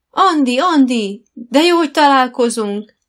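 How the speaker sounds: very loud, high, enthusiastic, eager exclamation. Kitty, passing shops in the shopping centre, spots Andi; exclaiming enthusiastically. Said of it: "Kitty lelkendezve felkiáltott".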